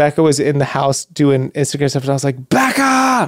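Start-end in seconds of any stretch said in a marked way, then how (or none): 2.5-3.3 very high, shrill scream. Retelling calling Becca from the jacuzzi for towels, retelling own scream. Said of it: "And she's just screaming".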